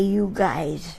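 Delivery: plain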